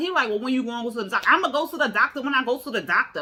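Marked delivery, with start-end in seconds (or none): 1.3-3.2 sassy, attitude-laden delivery. Retelling a woman's reply to a man's question, mimicking her attitude. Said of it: "She getting all mad and defensive".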